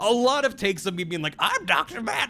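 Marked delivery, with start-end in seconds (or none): 1.4-2.3 voice cracking and breaking, worn-out. Retelling a tired voiceover take after long streams: imitating own cracking voice. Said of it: "my voice cracking".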